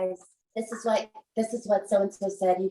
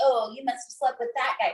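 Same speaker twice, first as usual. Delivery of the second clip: mock laughing delivery while talking; 2 semitones higher than usual. Retelling a castmate's justification of her remark, imitating someone laughing while talking.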